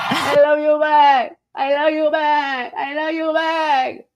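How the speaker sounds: high, slow mock Spanish accent.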